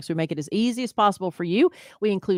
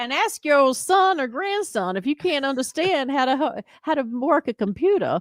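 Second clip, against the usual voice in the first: put-on high-pitched Southern belle voice; 7 semitones higher than usual. Host telling listeners to search for the show, southern belle accent. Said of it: "Now you got Southern Belle".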